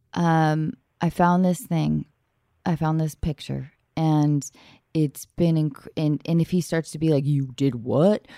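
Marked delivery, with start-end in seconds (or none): 7.2-8.2 put-on dopey caveman voice, much lower. A woman acts out how a guy reacts to a found picture, in a dumb caveman guy voice.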